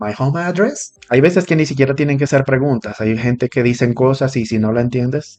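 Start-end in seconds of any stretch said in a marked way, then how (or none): 0.0-0.9 address lifted with question-like rising tune. Teaching learners to repeat what they understood as a question: rising on address. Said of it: "Lo único que van a agregar es la entonación hacia arriba".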